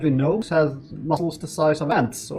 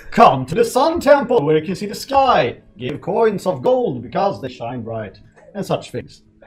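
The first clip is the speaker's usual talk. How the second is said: loud preaching sermon voice; 3 semitones higher, 7 dB louder than usual. A self-declared charlatan recruits peasants and farmers to his church: charlatan preaching to peasants. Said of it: "I am a charlatan. / No, younger brother of that guy. / I create a church for all the peasants and farmers out there who need something to believe in".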